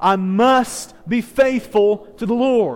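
loud, slow, fervent, passionate, full-voiced delivery. A speaker leading an audience in a repeated declaration, passionate and loud. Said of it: "say it with some passion and with some volume".

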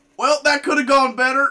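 put-on high Alabama accent. Retelling what Casey said after pinning the speaker, doing Casey in an Alabama accent. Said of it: "your impersonation of Casey had an inexplicable Alabama accent".

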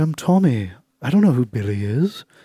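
slow, put-on British accent. Retelling a documentary about a man who suddenly switches personalities: imitating a British accent. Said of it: "starts speaking in a British accent".

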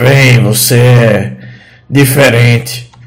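rough, throaty, halting, broken foreign-sounding speech. Narrating a scene, voicing a sharp-toothed figure who struggles with the common tongue: guttural voice, broken Common. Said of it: "ele fala com a voz gutural dele e com extrema dificuldade em falar a língua comum".

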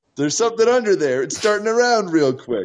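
very high-pitched, shrill shouting. In a role-play, calling out to people on the shore: yelling. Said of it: "I yell".

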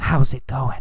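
whispered, barely voiced, hushed and breathy. Explaining the difference between yelling and whispering, then whispering the example: whispering. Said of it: "or did he whisper".

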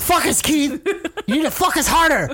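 put-on high scolding Spanish accent. Speakers recall a teacher scolding a student, imitating his Spanish accent. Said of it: "with that Spanish accent".

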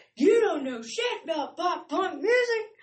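put-on, shrill, very high-pitched yelling. Retelling a headbanging moment, the speaker acts out yelling at a child. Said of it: "just yelling at her".

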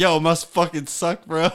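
mocking, sarcastic, taunting tone. Retelling pulling up beside a guy whose house burnt down: retelling a sarcastic remark. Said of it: "said some sarcastic ass shit like".

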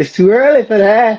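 squeaky, very high big-mama falsetto. Retelling a funny line someone said, imitating his voice like Big Mama. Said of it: "And it's the way his voice".

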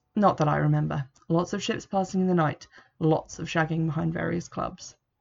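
ordinary talk

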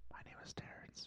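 near-silent, barely audible, very quiet whisper. Giving a name at the opening of the show, speaking less than a whisper. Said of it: "like less than whispering".

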